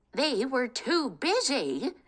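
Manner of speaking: put-on screeching old witch voice, shrill, drawn-out shriek. Reading a story, the witch speaks after the villagers go home: shrieking witch. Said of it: "screeched an old woman, ... Kate was lost in her thoughts of him when suddenly a screeching voice shattered the peace. ... screeched an old woman".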